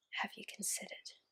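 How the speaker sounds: whispering. A narrator voices a question that keeps returning, in a whisper. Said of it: "Again, a whisper".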